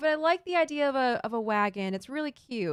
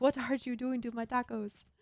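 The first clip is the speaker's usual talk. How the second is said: failed, bad put-on German accent; 4 dB quieter than usual. A streamer reads a viewer's request aloud in the requested voice; bad German accent. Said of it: "That was not a French, uh, German accent".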